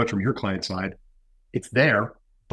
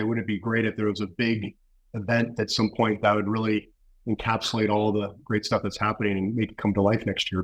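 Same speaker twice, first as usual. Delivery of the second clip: ordinary talk, nothing marked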